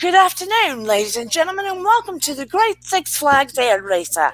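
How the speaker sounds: put-on British announcer voice. Recalling announcing over the speaker at Six Flags, in a put-on British announcer accent. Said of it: "I would change my accent because I'd get bored".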